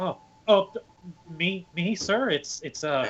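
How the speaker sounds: starstruck flustered stammer. In a roleplay, a character is asked their name by someone they admire: starstruck and flustered. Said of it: "I'm completely starstruck right now".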